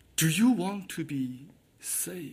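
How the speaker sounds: soft, hushed whisper.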